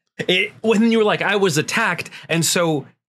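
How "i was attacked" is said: ordinary talk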